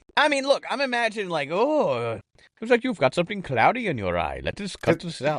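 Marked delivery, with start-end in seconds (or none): 1.6-5.4 swooping, laid-on, put-on Indian man's accent. Imagining how the man would talk, imitating an indian man.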